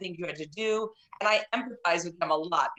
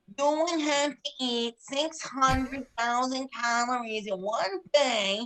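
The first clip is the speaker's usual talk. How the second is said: honking, pitched-up voice with a scolding tone; 5 semitones higher than usual. Retelling how a TV doctor talks to a patient, honking Dr. Now impression. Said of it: "he talks like this".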